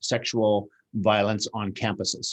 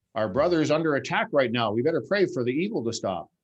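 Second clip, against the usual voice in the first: dripping sarcasm in a high, mocking tone; 5 semitones higher than usual. Mimicking a prayer meeting's response to the accusations: sarcastic imitation. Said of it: "Sorry for being a little bit sarcastic there".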